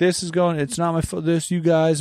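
high, whiny, tearful, blubbering crying voice. Imitating a player who complained all game, mock crying. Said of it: "He's, like, just, like, crying".

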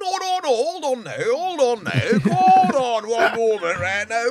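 put-on high, loud, drawn-out northern accent. Doing a friend's voice after being asked for a northern voice: Paddy McGuinness impression. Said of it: "that's Paddy".

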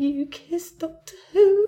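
put-on tearful words broken by sobs, high. Retelling how Holly cried by the bed, imitating Holly sobbing. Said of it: "Holly was by the bed crying".

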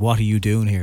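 ordinary delivery

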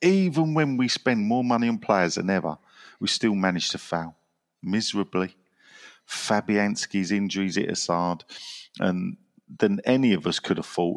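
ordinary delivery

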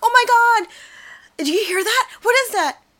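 thrilled, excited, very high-pitched voice. Retelling a game where Nick and Aaron hear something, acting out excited friends. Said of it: "get so excited because they hear something".

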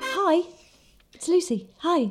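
very high-pitched, begging, pleading voice. Opening a podcast after the intro quiz, saying hello in a beggy voicemail voice. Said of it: "It sounded like a really beggy voicemail that you leave".

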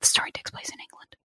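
real, fast, breathy whisper under the breath. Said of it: "instead of fake whispering".

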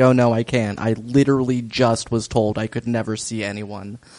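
ordinary talk

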